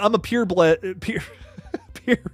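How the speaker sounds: laughing, breaking up mid-word. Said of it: "I can't even say that without laughing".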